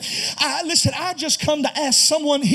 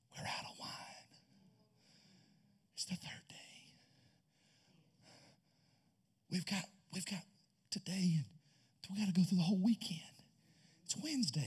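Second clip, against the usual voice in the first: hushed, very soft whisper, barely audible; 7 semitones lower, 19 dB quieter than usual. Speaker imagines what the father of the groom says, whispering. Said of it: "I can almost hear the father of the groom whispering".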